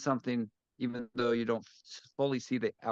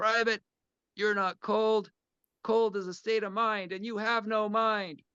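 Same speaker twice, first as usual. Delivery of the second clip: stern, firm, unsympathetic drill sergeant voice, no compassion; 10 semitones higher than usual. Recounting a sergeant's reply to a private complaining of cold, imitating firm drill sergeant voice. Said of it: "that drill sergeant voice".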